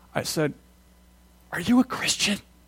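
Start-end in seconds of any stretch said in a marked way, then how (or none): 1.5-2.4 breathy, hushed whisper. Retelling a question asked while working, imitating own past whisper. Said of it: "Why am I whispering?".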